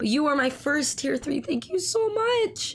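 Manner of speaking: excited, thrilled, rising, near-tearful voice. Thanking a first tier-three supporter, excited and sounding close to tears. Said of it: "it sounds like I'm about to cry, but I'm just getting excited".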